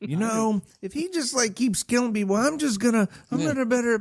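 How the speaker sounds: very high, pushed-up voice, deliberately done badly. Picturing a movie character in Halloween, done as a horrible Garth impression. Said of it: "That was a horrible Garth impression".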